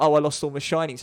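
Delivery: plain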